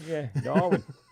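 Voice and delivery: attempted Massachusetts accent. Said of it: "You were trying to get the accent".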